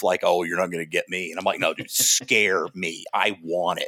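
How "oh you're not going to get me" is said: fast, cocky, big bad tough-guy bravado. Describing people who act tough in a haunted house, mocking their bravado. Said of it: "try to be all big and bad and tough".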